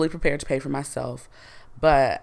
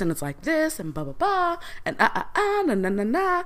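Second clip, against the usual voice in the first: put-on very high, sing-song, swooping sorority girl voice; 13 semitones higher than usual. Showing the tone the speaker uses when frustrated, sorority girl voice. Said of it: "my sorority voice".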